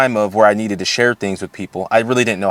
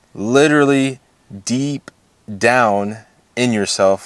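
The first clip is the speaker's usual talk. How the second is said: very slow, halting, broken-up phrasing. Talking about mindfulness practices, the speaker is talking real slow. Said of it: "I'm talking real slow".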